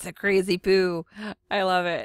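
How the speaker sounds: giggling. Shrinking a drawn eye's pupil, the speaker comments on it while giggling. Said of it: "I'm sorry for giggling".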